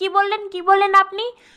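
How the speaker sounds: plain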